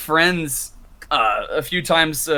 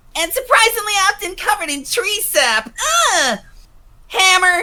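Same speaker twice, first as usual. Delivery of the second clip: very high, ear-splitting, piercing character voice; 4 dB louder than usual. Demonstrating a character voice, warning it may hurt everyone's ears: ear-splitting Scootaloo voice. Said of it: "let me let me break everyone's ears".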